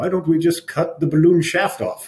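put-on Eastern European accent. Retelling a technician's suggestion during a case: imitating John's Eastern European accent. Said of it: "his very, uh, Eastern European accent".

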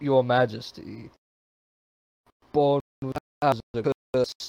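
put-on loud, forced-out elderly man's voice. After being told to sound older, the voice actor tries again: old man voice. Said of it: "We asked for an old man, not a young man".

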